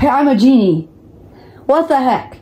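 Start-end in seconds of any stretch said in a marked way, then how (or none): 0.0-0.8 small, restrained shout. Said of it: "you screamed at the top of your lungs".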